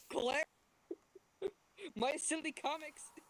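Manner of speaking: very loud, high-pitched yelling at full volume. Imagining Gru yelling outside a door: Gru yelling. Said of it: "imagine Gru yelling outside my door".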